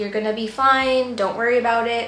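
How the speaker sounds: ordinary delivery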